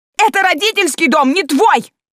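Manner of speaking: shrill shrieking at a very high pitch. A woman answers the father throwing her out of the house, shrieking. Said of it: "верещала Валя".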